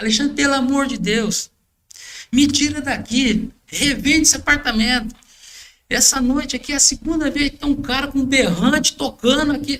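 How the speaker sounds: pleading voice on the edge of tears. Retelling a client's phone call begging to resell the apartment: imitating someone almost crying. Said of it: "quase chorando".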